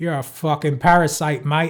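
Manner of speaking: shoddy put-on Australian accent. Discussing a movie, the speaker slips into a shitty Australian accent. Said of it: "I don't know why I'm doing Australian".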